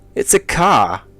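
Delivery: put-on loud, high Australian accent, "car" said without R. Telling how the Australian guy answers, in an Australian accent with no R. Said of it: "They just don't pronounce the R".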